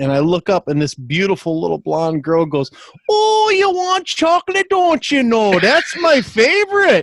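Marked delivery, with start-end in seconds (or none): 3.1-7.0 put-on Upper Michigan accent. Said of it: "least sexy accent in the world".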